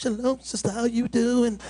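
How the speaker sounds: meek, mild, timid, soft-spoken little voice. Speaker addressing the sisters, imitating soft-spoken men, mocking a soft-spoken voice. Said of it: "They still talk like this".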